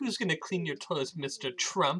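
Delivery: put-on sassy, dissing voice. Retelling a famous televised comeback: imitating Kelly Osbourne's sassy diss. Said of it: "I love how she said it like it was such a serve".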